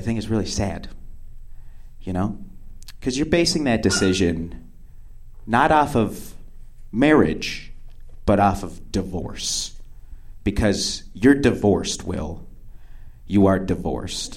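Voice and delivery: low, soft, grave, dead-serious voice. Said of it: "she just suddenly gets very serious".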